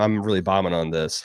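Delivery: ordinary talk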